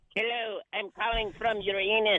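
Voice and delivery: very low, hushed put-on alien voice. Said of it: "you have to vote in your alien voice".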